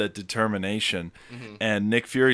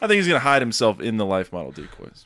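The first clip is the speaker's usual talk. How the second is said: ordinary talk, nothing marked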